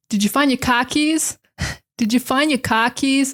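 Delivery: distinct, showcased Boston accent. Speaker picks a phrase to show off the boston accent: boston accent. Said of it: "To sh- to showcase the Boston accent".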